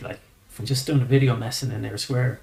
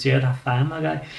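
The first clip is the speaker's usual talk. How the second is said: put-on broad Liverpool Scouse accent, laid on thick. Telling of a Liverpool parking ticket man recognizing him, in a thick Scouse accent. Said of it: "he goes like in his thick Scouse accent".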